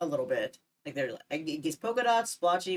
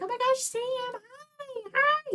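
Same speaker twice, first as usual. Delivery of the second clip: acted excited voice, very high, very slow, drawn-out. Recounting coming home from work and greeting Sam at the door: retelling own excited high-pitched greeting. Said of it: "high pitched and excited".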